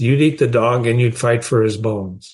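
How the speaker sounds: ordinary delivery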